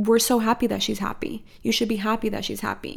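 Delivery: normal talking voice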